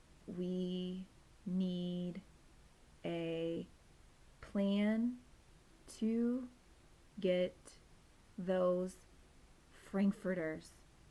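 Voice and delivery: flat, slow, dragging, halting, distracted monotone. Reading a story, a distracted dog voices his thought, monotone and slow. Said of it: "his speech had become monotone, and his words came out much slower".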